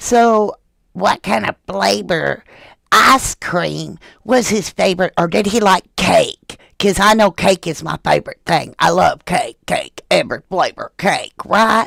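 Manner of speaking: exaggerated, gushing, over-the-top parody with creaky voice. Showing how the questions sounded to the speaker, in a mocking impression of the questioner. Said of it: "this is what it sounded like to me".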